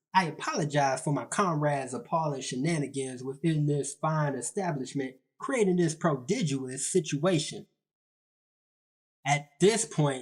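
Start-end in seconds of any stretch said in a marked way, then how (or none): none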